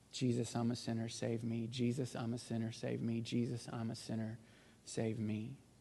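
very quiet, half-whispered, under the breath. Retelling a prayer said on the back row, eyes shut tight: retelling a half-whispered prayer. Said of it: "Just whispered it under my breath".

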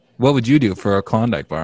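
ordinary delivery

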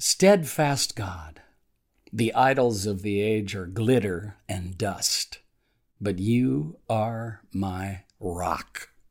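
slow, deliberate reading, each line taken slowly. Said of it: "And I'm gonna read it slowly".

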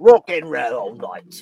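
put-on messed-up jumbled British, Irish, surfer-dude accent. A rock-and-roller character interrupts to introduce himself, in a messed-up mixed accent. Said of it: "messed up British, Australian, Scottish, Irish, and surfer dude accent".

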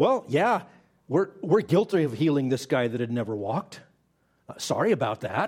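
mock dry, sarcastic admitting tone. Retelling the apostles' confession before the council: mock sarcastic confession. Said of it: "They weren't as sarcastic as I am".

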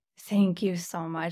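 choked up, getting emotional. Thanking a guest for kind words about the podcast, choked up. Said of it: "I got a little choked up there".

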